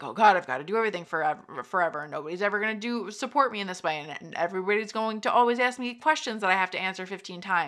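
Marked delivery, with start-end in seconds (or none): none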